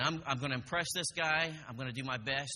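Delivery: normal talking voice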